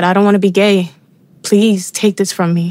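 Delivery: acted anguished crying out. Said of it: "I cried out and I said".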